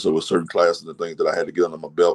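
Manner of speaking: ordinary talk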